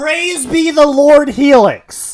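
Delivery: very loud, high, fiery, wild preacher voice. Proclaiming praise as a joke in a group chat: crazy preacher voice. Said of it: "sometimes you sound like a crazy preacher".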